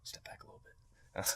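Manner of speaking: hushed, breathy, soft near-whisper. Retelling how a magician quietly told them: imitating Teller speaking softly. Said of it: "softly says".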